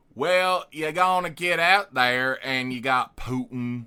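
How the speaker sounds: loud mock Eastern European speaker doing Southern accent. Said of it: "Eastern European doing a Southern accent".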